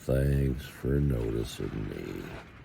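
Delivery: cartoon donkey voice, very deep, low and hushed. Tucked in a sleeping bag on a freezing night, speaking in Eeyore voice. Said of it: "In my best Eeyore voice".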